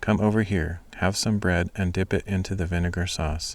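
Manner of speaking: plain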